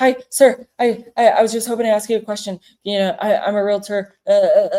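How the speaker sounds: jittery, hyper, shaky, nervous stammering, tripping over words. Speaker imitates a nervous realtor approaching someone: imitating a shaky, nervous voice. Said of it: "their voice gets shaky and they get all hyper".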